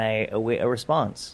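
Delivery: normal talking voice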